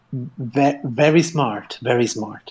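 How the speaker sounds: plain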